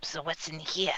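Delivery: put-on slight New York accent creeping in. Asking the game master what is in the room: slight new york accent. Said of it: "a bit of a New York accent there".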